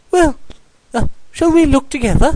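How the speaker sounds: nervous, anxious, very high pitched and quick. Hearing that Owl is out on the same task, he suggests looking together; nervously. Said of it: "suggested Piglet nervously".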